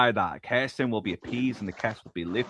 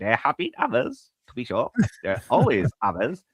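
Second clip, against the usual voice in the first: put-on sentimental villain voice. Retelling a movie scene, voicing Lo Pan: sentimental Lo Pan voice. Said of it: "Lo Pan gets really sentimental".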